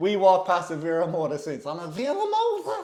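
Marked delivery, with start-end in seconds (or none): 1.9-2.8 put-on Cork accent, much higher, louder. Retelling what they say every time they walk past the shop, imitating a Cork accent. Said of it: "the same accent comes out the minute he sees the sign".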